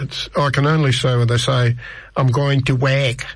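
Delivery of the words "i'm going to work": Scouse accent, Liverpool vowel in "work". Showing how people from liverpool talk: his best scouse accent. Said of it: "that's my best Scouse".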